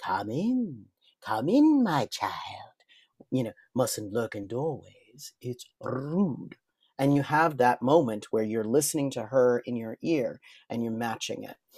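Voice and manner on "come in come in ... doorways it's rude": slow, unhurried, deliberate put-on voice. Showing how matching the voice sounds: Ursula voice. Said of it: "as Ariel and Ursula".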